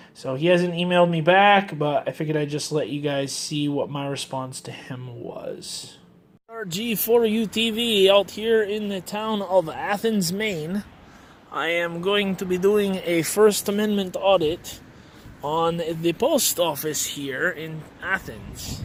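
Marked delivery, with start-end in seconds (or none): 6.5-18.8 put-on Russian accent, pitched up. Speaker introducing a first amendment audit at the athens post office: fake russian accent. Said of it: "changing him to be Russian accent".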